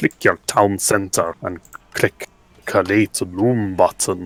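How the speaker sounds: slow, phony, very bad Scottish accent. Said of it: "the worst Scottish accent I've ever heard".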